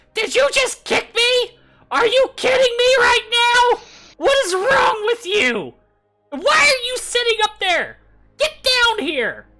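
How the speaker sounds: very high, very loud, shrill goblin wail. Acting out a goblin just kicked by another goblin: wailing goblin voice. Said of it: "and then this wail".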